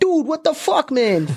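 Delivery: aggressive put-on Boston accent, very high and drawn-out. Acting out how a boston guy sounds after sizing him up: imitating a hostile boston accent. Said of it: "when we try to do impersonations of these accents".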